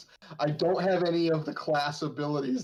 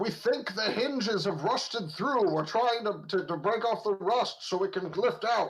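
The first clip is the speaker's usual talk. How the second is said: loud yelling out, much higher pitch; 6 semitones higher than usual. Player's character, stuck behind a door, calls to those outside: yelling out. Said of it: "I'm gonna yell out".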